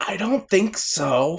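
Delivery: high-pitched, secretive, private whisper. Covering great-grandma's ears and whispering back an answer to Saf: retelling a whisper. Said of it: "I whisper back".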